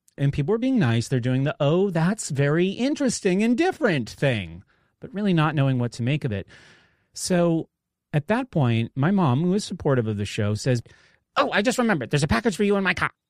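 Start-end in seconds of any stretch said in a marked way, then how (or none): 11.4-13.1 put-on quick, high East Boston accent. Retelling how your supportive mom mentioned a package for you, imitating own mother from East Boston. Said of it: "she grew up in east boston i'm doing like a perfect impression of her".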